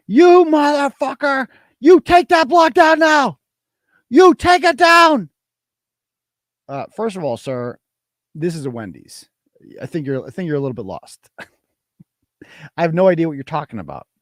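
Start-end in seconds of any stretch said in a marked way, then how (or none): 0.1-5.3 play-acted very high, slow screaming tirade. Retelling a phone call where a caller screams at the speaker: imitating a guy screaming. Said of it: "this guy starts screaming at me".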